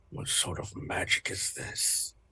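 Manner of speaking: very quiet, whispered mutter under the breath. A player's character, seeing the vision, mutters so Sapphire can hear. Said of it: "I'll probably mutter under my breath".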